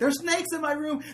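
acted terrified screaming. Retelling waking up at night as a kid: imitating own childhood screaming. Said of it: "I would wake up screaming".

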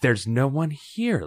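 soft, half-whispered delivery. Liz speaks to you after stepping down from the tubes into a cavern, half-whispering. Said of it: "Liz whispers".

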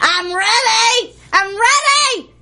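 put-on high, loud, impatient old lady shout.

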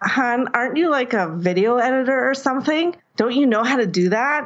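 put-on teasing, heavily sarcastic tone. Retelling what her husband said while she sorted through video, mimicking a sarcastic remark. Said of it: "my husband says to me really sarcastically".

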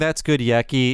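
plain

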